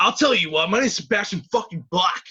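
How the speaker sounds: angry, loud put-on voice. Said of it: "my impression of what he would sound like if he was really angry".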